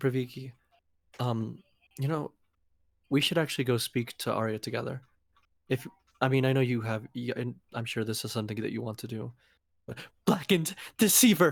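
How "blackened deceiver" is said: sudden, panicked, harsh, raised outburst. Role-player voicing a character's reply to a companion, panicked, harsh tone. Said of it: "just in a panicked, harsh tone".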